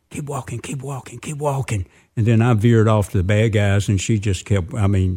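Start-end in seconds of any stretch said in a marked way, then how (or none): 0.1-1.8 hushed, repeated half-whisper under the breath. Retelling telling his wife to keep walking near a theater: retelling a half-whisper. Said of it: "all of a sudden I whispered".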